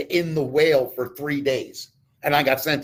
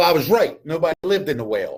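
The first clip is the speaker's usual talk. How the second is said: normal talking voice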